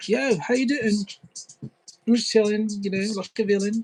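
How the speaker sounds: easygoing street-guy British accent. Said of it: "this is more of my laid back British".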